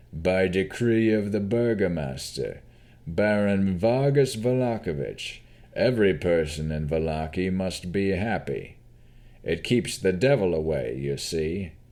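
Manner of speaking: gruff, slow voice of a town official. A man in livery answers Navarra's question in a gruff voice. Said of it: "he stated in a gruff voice. / They were about to ask someone for directions to the inn when they saw a tall, bald, broad-shouldered man in livery ordering 2 guards to tear down the posters. / he state".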